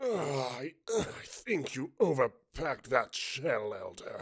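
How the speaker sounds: pained groaning through the hurt. Reading a story aloud, a character hurt after a blast: groaning. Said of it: "Mustang groaned beside me".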